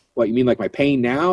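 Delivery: plain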